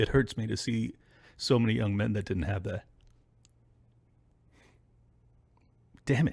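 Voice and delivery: getting choked up. Speaker surprised by their own emotion while talking, choked up. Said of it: "I don't know why I'm getting choked up".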